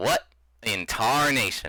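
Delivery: acted-out, demanding, confronting tone. Voicing a man who notices a stranger and walks over: demanding voice. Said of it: "kind of has a demanding voice".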